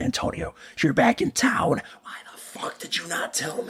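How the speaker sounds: play-acted whispered, breathy, half-voiced yell under breath. Retelling people in passing cars calling out: imitating people screaming. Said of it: "they're all screaming my name".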